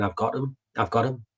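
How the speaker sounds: ordinary delivery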